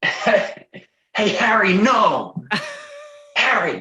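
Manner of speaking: put-on very high, sing-song, swooping, taunting American accent. Asked for an impression from the skit series, he does the American Bully accent. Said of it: "Of the accent of the American Bully".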